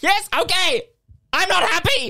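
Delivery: yelling it all out. In a drama scene, a character answers another's question, shouting. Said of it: "Why are you shouting like that?".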